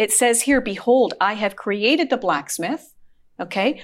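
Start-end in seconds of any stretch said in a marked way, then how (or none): none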